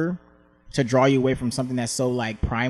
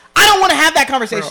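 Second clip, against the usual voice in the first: very high-pitched, fed-up, annoyed shouting; 11 dB louder than usual. Retelling yelling in the car during a talk: retelling own yelling in car. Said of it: "I started fucking yelling in my car".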